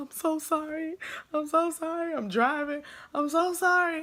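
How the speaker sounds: mock crying, high, tearful, fighting back tears. Retelling apologizing while driving and crying, imitating crying while apologizing. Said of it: "You ever drive and cry at the same time?".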